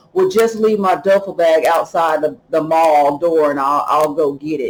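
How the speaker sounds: normal talking voice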